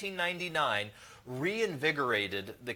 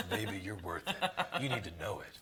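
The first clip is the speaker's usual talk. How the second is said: exaggerated, low, soft voice; 5 semitones lower, 6 dB quieter than usual.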